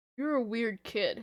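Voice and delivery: ordinary talk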